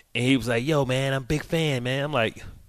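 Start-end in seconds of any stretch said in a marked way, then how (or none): 0.6-2.0 slow, gentle, soft-spoken voice. Retelling what a fan said to him at Whole Foods: imitating a soft voice. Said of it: "soft voice".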